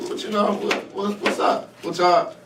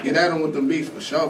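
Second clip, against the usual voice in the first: plain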